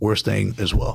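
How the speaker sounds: plain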